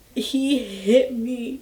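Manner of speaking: crying, barely getting words out. Retelling saying that he hit the speaker, imitating crying, barely getting words out. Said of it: "barely trying to get out the words".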